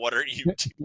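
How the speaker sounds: imitated yelling. Retelling drivers yelling from passing cars: imitating drivers yelling.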